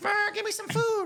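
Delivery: extremely high-pitched voice. Answering a description of a very high voice: Ross Matthews impression. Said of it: "the highest voice you've ever heard in your life".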